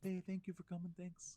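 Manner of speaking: put-on meek quiet voice. Telling of a small quiet man who signed a jersey, imitating a meek quiet voice. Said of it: "how like sort of meek he sounded".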